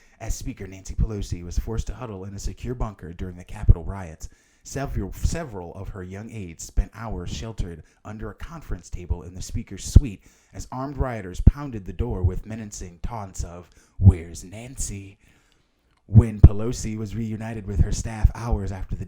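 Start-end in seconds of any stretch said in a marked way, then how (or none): 0.2-15.2 dramatic spy-thriller movie narrator voice. Reading a news article aloud in a spy movie synopsis voice. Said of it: "I'm reading it in this voice because that's the way it's written. It's written like it's supposed like a synopsis for, for a spy movie".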